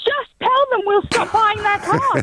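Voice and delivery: put-on half-shout. Retelling what they shouted at the radio: imitating screaming at the radio. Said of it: "I'm screaming at the radio going".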